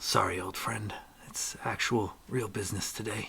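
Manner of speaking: hushed whisper, under the breath. A character whispers an aside just loud enough for the party, whispered under his breath. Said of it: "whispers under his breath".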